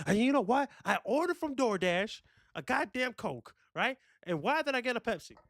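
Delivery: very high, shrill, screaming angry rant. Showing how a solo show would sound: mock angry ranting. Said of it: "me just screaming at, about shit that just pissed me off".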